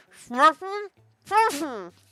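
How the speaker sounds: very high, loud, muffled mumble, cheeks full. Reading a player's line after he crams a final marshmallow in, mouth stuffed. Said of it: "pushes one final marshmallow into his mouth".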